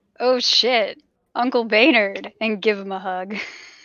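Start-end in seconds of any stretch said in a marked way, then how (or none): 0.2-2.3 much louder, loud, full-voiced delivery. Winter jumping up to greet and hug Uncle Baynard, not speaking so quietly. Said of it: "not speak quite so quietly".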